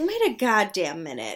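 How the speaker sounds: plain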